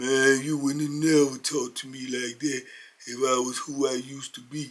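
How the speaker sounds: slow, low, soft, drawn-out wounded voice. Retelling how Sam answered a man who talked down to him: imitating Sam, slow and low. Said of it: "he just talked so slow and low".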